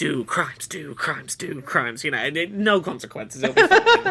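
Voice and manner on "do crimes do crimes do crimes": hushed whisper, much lower and slower. Imagining whispering to the kid, the speaker acts it out, whispering. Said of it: "start whispering to the kid".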